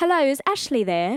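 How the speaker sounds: put-on British accent. Recreating a phone call the speaker used to make with friends: put-on british accent. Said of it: "I would put on a British accent".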